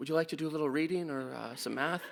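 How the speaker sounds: gentle, soft, hushed half-whisper. Retelling kneeling down to ask a small kid a question: half-whispering. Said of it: "I'm whispering to him basically".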